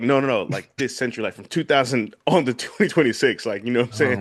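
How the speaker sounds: usual speaking voice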